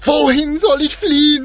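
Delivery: very high, loud, desperate, despairing cry. Ruben, the eldest, thinking of his old father, crying out loudly. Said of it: "schrie er laut auf".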